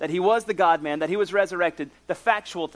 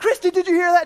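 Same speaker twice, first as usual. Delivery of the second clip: very high, loud, excited shriek of joy; 12 semitones higher, 6 dB louder than usual. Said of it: "I'm like screaming".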